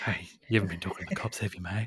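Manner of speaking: very low, deep voice, pitched way down. Doing a Ben Mendelsohn impression while discussing a Star Wars trailer: Ben Mendelsohn impression. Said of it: "the greatest Ben Mendelsohn impression".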